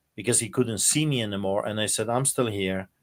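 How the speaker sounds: plain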